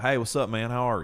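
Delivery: put-on Southern accent. Talking about picking up accents when traveling, imitating a Southern US accent. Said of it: "us going down south and being like".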